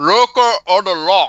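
high, slow, loud, drawn-out stuffed-mouth voice.

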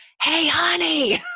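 loud, very high-pitched stage whisper. Imitating a grandma greeting someone at church, imitating a grandma's loud whisper. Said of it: "it's like the grandma whispering at".

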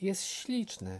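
enchanted, admiring delight. Narrator reading Mini admiring the new bow-tying robot, delighted. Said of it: "zachwyciła się Mini".

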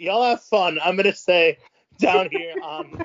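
mock tone, high, loud, drawn-out calling.

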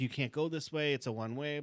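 put-on barked screaming, mild. Retelling how police screamed at the driver: imitating police screaming. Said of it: "just screaming, like".

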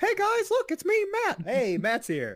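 very high, swooping, sing-song voice. Showing the others a Matt impression: imitating Matt. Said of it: "I do a really good Matt impression".

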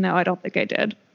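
mock-sad delivery. Recounting a show scene, quoting one character answering another: retelling a sad line. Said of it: "Aang really sadly saying".

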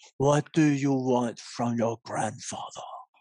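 mobster voice, cheeks puffed. Trying a voice with cheeks puffed out: Godfather voice, puffed cheeks. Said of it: "Let's see if I can puff up the cheeks".

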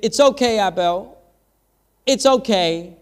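put-on little baby voice, like a toddler boy. Retelling how two-year-old Nate comforted his crying sister: Nate's little baby voice. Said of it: "in his little baby voice".

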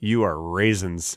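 put-on contemptuous tone. Acting out talking to a bag of raisins: acting disgusted at raisins. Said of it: "I didn't say it in that tone".

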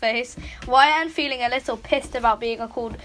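plain

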